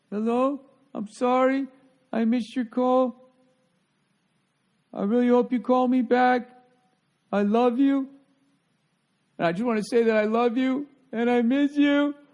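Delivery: very high, loud, tearful wailing, sobbing voice. Speaker imitating a girl's voicemail to her ex-boyfriend, imitating someone crying. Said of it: "sounds like the impression me and Paul do when we when we do the crying thing".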